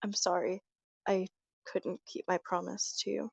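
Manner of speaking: soft, hushed whisper spoken up close. Narrating, Amelia falls to her knees before Hiccup and speaks: Amelia whispering. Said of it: "she whispers".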